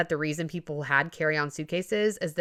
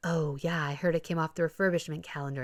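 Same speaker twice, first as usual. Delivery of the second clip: mock whisper, quieter; 4 dB quieter than usual. Retelling what people in the line said: imitating people whispering. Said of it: "kind of whispering about their plan and like".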